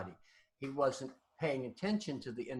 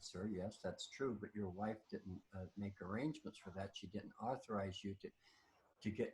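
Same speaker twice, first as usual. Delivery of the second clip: timid, faltering, soft and shy little voice; 5 semitones lower, 8 dB quieter than usual. Retelling a cashier's reply to an angry customer: imitating a little shy voice. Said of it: "in this little shy voice".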